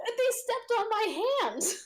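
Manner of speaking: overdramatic, very high, pained yelp. Game narrator voicing a cleric calling out as the party walks past, yelling. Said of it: "the cleric like yells as you go by".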